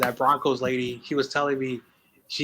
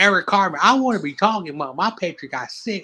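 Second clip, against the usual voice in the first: loud, high, botched attempt at a Southern accent; 6 semitones higher, 5 dB louder than usual. Speaker imitating Matt Coulter addressing Cartman; attempted Southern accent as Matt Coulter. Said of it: "I can't do that Southern accent".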